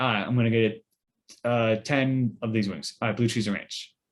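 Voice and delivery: ordinary talk, nothing marked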